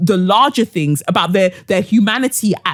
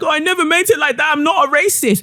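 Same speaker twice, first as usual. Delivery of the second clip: tearful, weepy, high crying voice; 8 semitones higher than usual. Retelling what someone said while crying: imitating Mary crying. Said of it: "Mary's crying".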